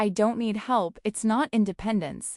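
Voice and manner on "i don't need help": plain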